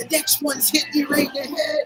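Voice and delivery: mock, high-pitched, hollered yell. Retelling a guy's threat after a bottle landed nearby: imitating someone yelling. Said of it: "he's just yelling".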